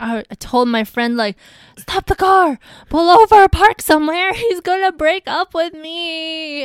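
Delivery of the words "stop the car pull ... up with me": frantic, very loud, high, panicked voice. Recounting what she told her friend on the phone, re-enacting panicked pleading. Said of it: "And I started panicking".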